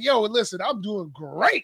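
loud, slow, overly polished, businesslike delivery. Retelling how a friend answered about his weekend: imitating Harrison, overly professional. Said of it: "he was so professional with his, how he was feeling".

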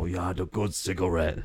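bad, fake Chinese accent. Talking about smokers at their university, the speaker puts on a bad Chinese accent. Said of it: "Was that a Chinese accent?".

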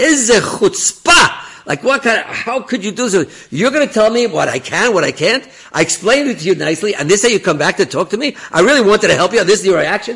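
very loud, very high, shrill, furious screaming. Retelling how a furious man screamed at Rav Tenenbaum, imitating the screaming. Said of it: "He's screaming at him and screaming at him".

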